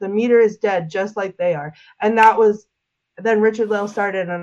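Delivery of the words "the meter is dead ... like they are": ordinary talk, nothing marked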